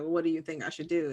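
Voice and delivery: ordinary delivery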